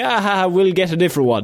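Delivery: put-on jokey tone. Retelling how she reacted to the lost dress: imitating someone joking. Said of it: "she was joking about it".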